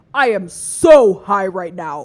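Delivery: booming, very deep, very loud voice. Retelling a time on edibles, quoting Roy on the couch, Roy's deep voice. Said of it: "in a deep ass fucking voice".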